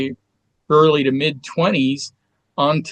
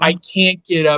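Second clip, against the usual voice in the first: put-on choked sobbing, slow and tearful; 3 semitones higher than usual. Retelling a call with an agent while grieving: imitating crying while speaking. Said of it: "I was crying so hard".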